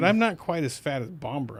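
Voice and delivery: ordinary talk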